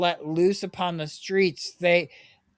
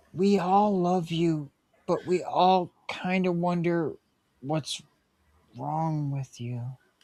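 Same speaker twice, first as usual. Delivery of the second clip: soft half-whisper, close to the ear; 3 dB quieter than usual. Voicing a character who hugs a player and half-whispers in their ear: half-whispering. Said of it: "And he whispers in your ear".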